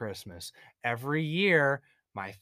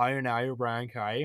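put-on Northern Irish accent; 3 semitones lower than usual. Speakers comparing how irish people say a phrase, in a northern irish accent. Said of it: "If it's like Northern Ireland".

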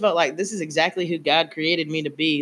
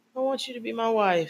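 broken-hearted, pleading, voice cracking high; 5 semitones higher, 5 dB quieter than usual. Re-enacting what she said, mock-heartbroken, voice cracking.

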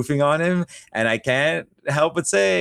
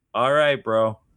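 put-on deadpan flat ironic tone, lower pitch; 4 semitones lower than usual. Explaining why a joke works, acting out the undercutting reply: retelling a deadpan reply. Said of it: "The deadpan".

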